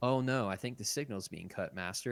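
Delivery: breezy, unbothered, casual offhand delivery. Retelling Anakin dodging Obi-Wan's order, imitating Anakin casually. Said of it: "But he says it so casually".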